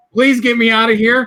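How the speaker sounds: mock begging like a crying baby, high-pitched. Retelling a phone call to his mother at eighteen: imitating his own crying plea. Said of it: "I probably was crying like a baby back then and going".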